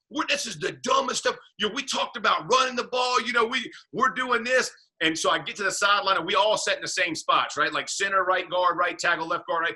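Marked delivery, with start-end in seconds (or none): 0.1-4.7 heated, angry, screaming rant. Retelling a sideline argument with the offensive coordinator: imitating someone screaming. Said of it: "I'm screaming at Tom".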